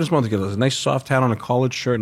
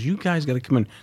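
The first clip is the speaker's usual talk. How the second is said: put-on laughing while talking; 3 dB quieter than usual. Retelling how a friend's mother called them inside: imitating someone laughing while talking. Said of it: "and she's laughing. She goes".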